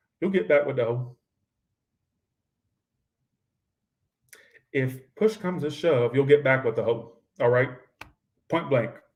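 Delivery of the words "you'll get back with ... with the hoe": put-on deep, strong South Georgia twang. Giving the outcome of a tarot reading, repeated in a very Southern Georgia accent. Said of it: "I said that very southern, very Georgia".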